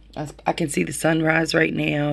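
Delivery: ordinary delivery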